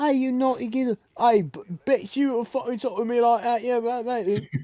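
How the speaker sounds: loud, very high, put-on British accent. Imagining two people falling in love with that accent, put-on British accent. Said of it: "two people falling in love with that accent?".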